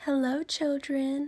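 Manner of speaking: sweet storybook voice. Miss Nelson returns and greets the children, sweet voice. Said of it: "someone said in a sweet voice".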